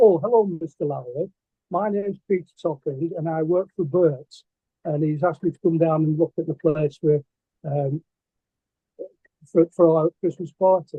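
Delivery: ordinary delivery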